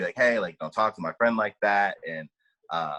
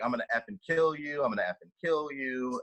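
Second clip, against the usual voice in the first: put-on screaming, barked with menace; 5 semitones higher, 5 dB quieter than usual. Retelling how a man stormed into a bar at a friend, imitating someone screaming. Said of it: "is like screaming at my friend".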